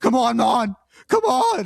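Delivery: very high, drawn-out scream climbing upward in pitch. Recounting yelling at the caster during a game, retelling own screaming. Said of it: "I'm just screaming into my microphone".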